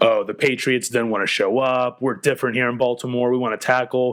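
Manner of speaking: usual speaking voice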